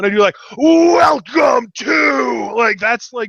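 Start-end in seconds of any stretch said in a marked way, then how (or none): 0.6-2.5 loud, angry wrestler-style belting, "to" drawn out. Showing how intros sound: angry Triple H voice. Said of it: "me almost channeling my inner angry Triple H".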